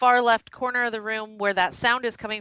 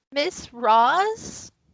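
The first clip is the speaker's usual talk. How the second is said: small, echoey, quavering voice with a drawn-out word; 4 semitones higher than usual. Narrating a scene, a voice from the corner calls out: tiny, echoey, quavering voice. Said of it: "a tiny, echoey voice say uh, a quavering".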